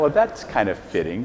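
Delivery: ordinary delivery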